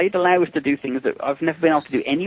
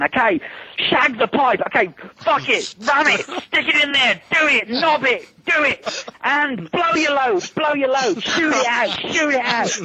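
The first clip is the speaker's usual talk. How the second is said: acted, very high-pitched screaming; 9 semitones higher than usual. Retelling directing a suited actor on a quiet street: retelling screaming directions. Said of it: "I'm screaming at Mike Regan".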